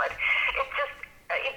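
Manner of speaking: emotional voice cracking high into a whisper. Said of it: "sorry if I'm a little emotional".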